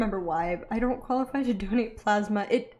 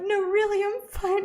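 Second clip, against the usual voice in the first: high, teary, insistent pleading through crying; 11 semitones higher than usual. Speaker retells crying while a pharmacist tried to calm them before a shot: imitating crying. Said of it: "I'm crying".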